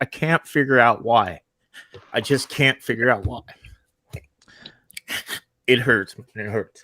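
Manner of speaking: voice breaking, choked up with emotion. Speaking to people who then comfort them, openly emotional. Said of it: "I'm sorry. I'm emotional. I can't hold this back".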